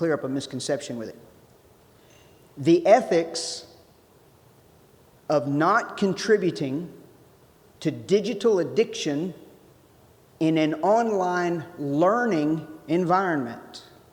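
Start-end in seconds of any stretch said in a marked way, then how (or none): 2.6-13.8 slow, deliberate reading with long pauses. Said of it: "I want to say it slowly".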